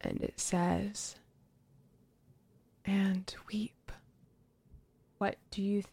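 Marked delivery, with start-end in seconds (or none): 2.8-3.9 hushed whispered voice. A game master voices the whisper that two characters hear, in a whisper. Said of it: "the both of you hear another whisper".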